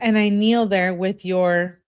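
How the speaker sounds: normal talking voice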